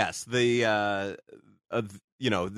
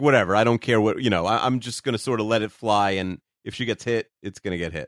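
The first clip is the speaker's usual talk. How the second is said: ordinary talk, nothing marked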